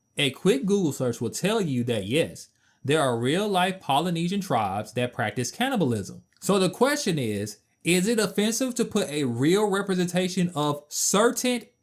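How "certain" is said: certain lifted in pitch and strongly stressed. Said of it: "emphasize the word certain".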